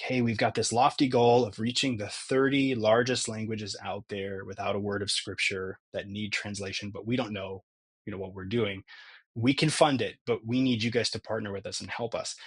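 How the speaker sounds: ordinary delivery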